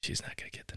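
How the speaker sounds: real soft, barely whispered. Retelling a line from a movie scene, imitating someone speaking real soft. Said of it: "real, real soft".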